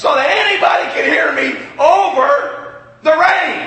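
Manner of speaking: very loud high voice. Telling of speaking to a group under a metal roof in pouring rain: raised voice over the rain. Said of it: "now I'm having to speak like this".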